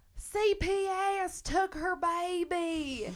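put-on screaming. Retelling a documentary scene where a family yells from their car: imitating people screaming. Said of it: "And they start screaming".

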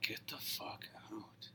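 slow, whispered mutter under the breath. Retelling what Paco said as they left, imitating Paco muttering under breath. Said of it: "mutter under his breath".

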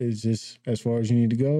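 ordinary talk

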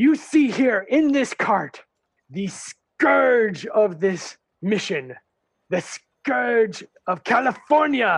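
puffed-up drill-sergeant harangue. A game master voices a captain addressing a crowd, Capitan Ortega yelling pompously. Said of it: "he starts yelling at everybody".

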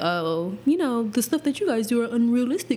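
mocking, mimicking voice. Apologizing for last episode, quoting what others said, in a mocking voice. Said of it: "Are you really using a mocking voice".

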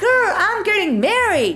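very high-pitched voice. Showing how to say you're getting married: very high-pitched voice. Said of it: "that's the kind of voice you use when you're saying that".

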